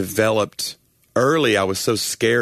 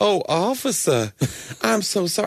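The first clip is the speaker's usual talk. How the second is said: higher-pitched put-on southern belle voice; 8 semitones higher than usual. Retelling a comedian's bit about being pulled over by police: imitating Karen Mills as a Southern belle. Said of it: "I'm not really a Southern belle".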